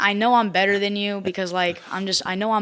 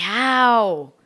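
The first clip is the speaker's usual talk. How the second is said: mock loud, long, stretched yell of how; 3 semitones higher, 6 dB louder than usual. Retelling the reaction to an opponent's crazy shot in a game: imitating own yell. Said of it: "when you yell the word "how,"".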